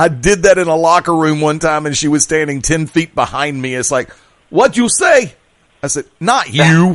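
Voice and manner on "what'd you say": put-on very high, strong Brooklyn accent. Act out a woman who overheard a remark in a locker room, straight-out-of-brooklyn accent. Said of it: "straight out of Brooklyn accent came".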